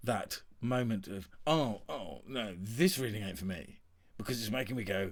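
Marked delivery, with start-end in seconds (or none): none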